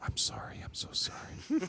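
hushed, genuinely concerned, breathy whisper. Retelling his last exam, he quotes his female doctor: imitating a doctor's concerned whisper. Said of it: "she whispered in my ear".

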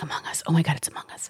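put-on hushed whisper. Retelling how kids pointed at her companion and whispered; retelling kids whispering. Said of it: "was pointing at him and whispering".

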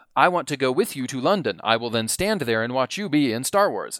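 ordinary talk

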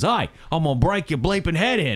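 mock Australian male voice. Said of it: "in true Australian fashion, goes".

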